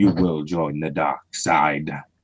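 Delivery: very low, soft villain voice. Talking about speaking carefully into the microphone, the speaker does a Darth Vader voice. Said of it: "or I may come across as Darth Vader".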